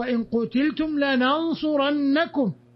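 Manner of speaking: usual speaking voice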